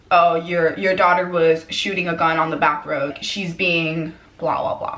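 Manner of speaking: ordinary talk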